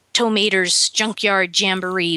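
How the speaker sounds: plain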